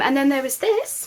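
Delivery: sudden slip into very high pitch. Showing clothes to viewers and describing them, voice going very high. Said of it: "my voice went very high then".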